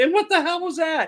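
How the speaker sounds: put-on very high, panicked, frantic blurt. Retelling a daughter's question after seeing a sky discharge: imitating a frantic question. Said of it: "in a very frantic way".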